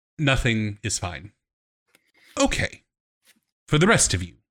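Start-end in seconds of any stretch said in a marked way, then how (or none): 0.2-1.3 resigned, accepting tone. Voicing a character answering a server's question: resigned. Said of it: "but just very kind of resignation".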